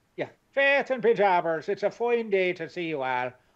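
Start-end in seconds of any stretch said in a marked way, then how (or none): 1.7-3.3 put-on Irish accent, raised higher in pitch. Signing off for St. Patrick's Day in an Irish accent. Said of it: "I'm going to sign off with my Irish accent".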